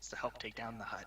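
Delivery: conspiratorial, hushed half-whisper. Role-play, a player's character answers her question, half-whispering. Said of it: "I'm gonna kind of whisper in her".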